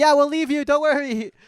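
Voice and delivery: mock cheerful, high, loud, reassuring voice. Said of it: "we're like".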